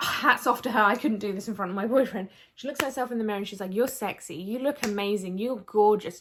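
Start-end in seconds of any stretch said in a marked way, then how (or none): none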